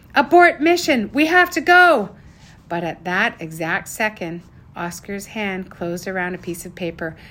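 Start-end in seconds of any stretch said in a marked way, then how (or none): 0.2-2.2 sudden, loud, high-pitched shout. Sage, hearing a countdown beep behind the door, calls to Oscar; shouting. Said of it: "Sage shouted".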